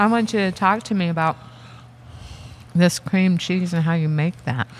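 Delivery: talking through a mouthful of food, while chewing. Turning the conversation to a guest, the speaker is talking with mouth full. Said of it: "Now I have my mouth full".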